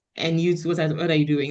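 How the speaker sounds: ordinary delivery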